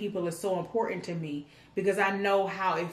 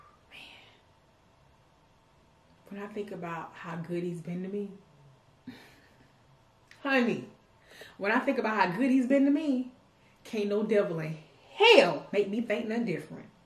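emotional, choked up, holding back tears. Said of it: "let me just gather my thoughts".

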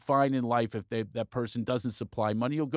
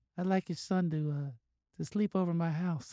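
soft-spoken, gentle voice, pitched a little high; 6 semitones higher, 4 dB quieter than usual. Acting out a hypothetical phone call to a listener: soft voice. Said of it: "said in a soft voice".

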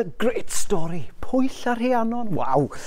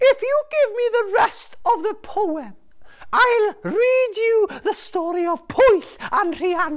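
very high talking seagull voice; 12 semitones higher than usual. Telling a story, the speaker voices a seagull in dialogue, talking seagull voice. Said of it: "A seagull. Oh, gwylan in Welsh".

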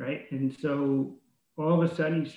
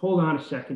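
plain

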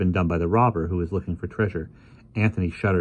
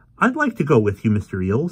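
keen, eager, animated voice; 4 semitones higher, 4 dB louder than usual. Anthony asks to go along with mr. eales, eager. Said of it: "said Anthony eagerly".

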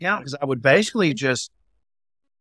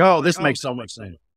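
ordinary delivery

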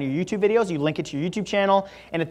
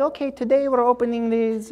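terrible put-on Brazilian accent, soft-spoken, pitched up; 6 semitones higher than usual. Describing a lady who unboxes Disney toys, bad Brazilian accent impression. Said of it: "She has like a Brazilian accent".

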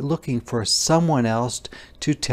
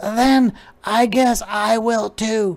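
very high, cheerful, drawn-out storybook voice; 10 semitones higher, 6 dB louder than usual. Reading a children's story, the polliwog answers the caterpillar happily. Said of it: "the polliwog said happily".

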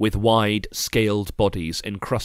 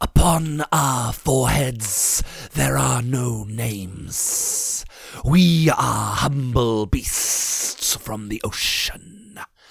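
meek, humble hissing sea-serpent voice; 3 semitones higher than usual. A storyteller voices captive sea serpents answering the narrator, in a hissing voice. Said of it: "I noticed a number of serpents tied in knots to the posts of the pier. They were humongous beasts".

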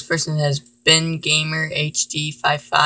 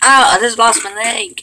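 loud, high-pitched shouting yell; 7 semitones higher, 7 dB louder than usual. Playing a game and calling out to viewers: yelling. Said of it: "I'm yelling so you can hear me better".

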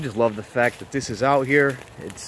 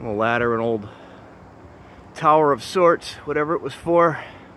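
panting, breathless, out-of-breath, winded delivery. A YouTuber who just ran shows viewers an old tower: out of breath. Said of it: "Sorry, I'm out of breath".

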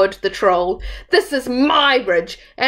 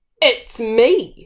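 gruff grunting. Narrator reads the biggest Billy Goat answering the troll, grunted. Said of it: "he grunted".

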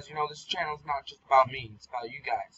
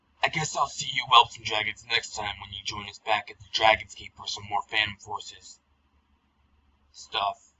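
clumsy, bad, put-on dragon voice; 5 semitones lower than usual. Doing a video outro for viewers, in a bad dragon voice. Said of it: "That was bad Dragon's voice right there".

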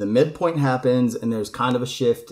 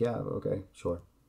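completely toneless, quiet, flat deadpan monotone; 4 semitones lower, 12 dB quieter than usual. Retelling the girl's reply in a story, completely monotone. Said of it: "Completely monotone".

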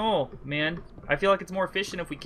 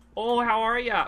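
put-on, pitched-up Alaskan accent, laid on thick; 6 semitones higher, 4 dB louder than usual. Asked to do the Canadian thing, you answer with your Sarah Palin Alaskan accent. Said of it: "that's my Sarah Palin Alaskan accent".

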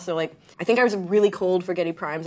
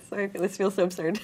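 spoken through laughter; 4 dB quieter than usual. Describing an early album's title, laughing.

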